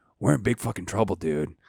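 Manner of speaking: imitated whisper. Retelling how a fellow musician on tour warned him: imitating a whisper. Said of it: "whispers in my ear".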